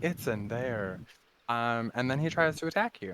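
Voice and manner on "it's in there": put-on giant tree creature character voice. Voicing a thirty-five-foot Ent answering a question about the door: giant tree Ent voice. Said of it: "and he's like".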